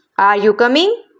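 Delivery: rising pitch on coming. Teaching rising intonation in yes-no questions: rising intonation on coming. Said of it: "आपकी जो टोन है वो increase हो रही है।".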